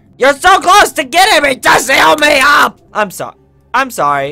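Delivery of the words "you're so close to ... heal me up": yelling, much higher and louder. Role-playing a downed game character calling out to a healer, yelling. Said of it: "I didn't mean to yell at you".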